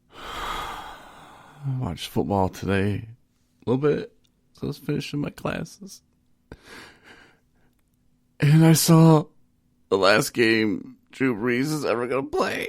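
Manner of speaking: on the edge of tears. Podcast host starting the show; holding back tears. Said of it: "I'm holding back tears".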